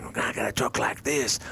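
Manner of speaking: rough, raspy, creaky stage whisper. Mocking how everyone in modern acting talks, in a mock raspy whisper. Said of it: "everyone is whispering".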